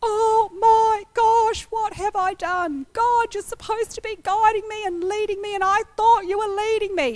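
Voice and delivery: mock tearful, high, on the verge of crying. Retelling a teary train ride home after losing a job, re-enacted crying. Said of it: "being very teary and crying and going".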